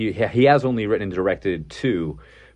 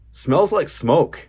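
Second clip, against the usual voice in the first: play-acted irritated, pissed-off voice, pitched up; 6 semitones higher than usual. Recounting a movie scene where the dad is on the phone with the furnace company, imitating a pissed-off dad. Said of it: "he's all pissed off".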